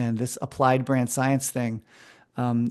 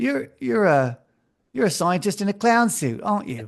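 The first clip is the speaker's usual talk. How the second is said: terrible fake Australian accent, pitched up; 8 semitones higher than usual. Quoting an Australian ex-rugby player from an ad agency, terrible Australian accent. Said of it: "it's my terrible Australian accent".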